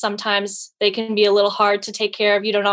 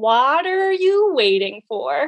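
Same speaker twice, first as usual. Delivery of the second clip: unhurried, a little slower pace; 4 semitones higher than usual. Repeating the product tagline when asked for one more time, a little slower. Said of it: "a little slower".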